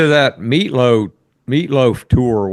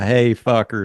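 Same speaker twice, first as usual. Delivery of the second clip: plain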